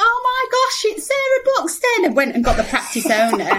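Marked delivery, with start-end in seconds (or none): 0.0-2.0 very high, thrilled, excited shriek. Retelling a practice manager's reaction on the phone: imitating excited screaming. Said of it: "started screaming down the phone".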